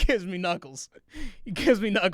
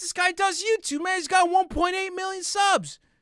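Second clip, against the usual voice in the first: put-on friendly, impressed, eager excitement; 11 semitones higher than usual. Retelling a guy's reaction on meeting the speaker, imitating genuine excitement. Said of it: "He's genuinely, like, excited".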